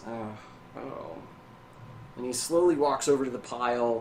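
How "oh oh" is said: soft, low mumble under the breath. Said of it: "he kind of mumbles".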